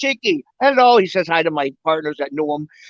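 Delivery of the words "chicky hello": put-on real, full, high, strong Chinese accent. Retelling how Johnny greeted the speaker on arrival, in Johnny's Chinese accent. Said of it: "he had that real Chinese accent".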